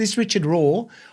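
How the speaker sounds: ordinary delivery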